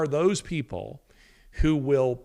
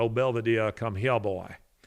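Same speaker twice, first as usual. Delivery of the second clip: put-on resonant, low, sonorous old-time Southern accent; 4 semitones lower than usual. Recalling how a father spoke, in a sonorous old Southern accent. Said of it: "spoke with that sonorous old Southern accent".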